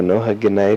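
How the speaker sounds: usual speaking voice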